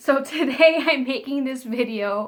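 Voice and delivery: loud talking through laughter. Opening a New Year video to viewers, laughing while talking. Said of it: "I'm laughing because".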